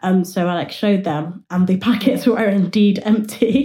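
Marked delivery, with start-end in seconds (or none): 1.5-3.7 words spoken through bubbling laughter. Telling another speaker about showing the empty packets, laughing while talking. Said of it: "I don't know why I'm laughing".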